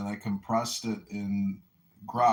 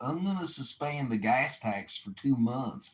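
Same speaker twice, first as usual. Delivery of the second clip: put-on rural Southern hillbilly accent; 4 semitones higher than usual. Calling in, the caller quotes a Republican candidate for governor in put-on Southern hillbilly accent. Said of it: "he has a Southern hillbilly accent".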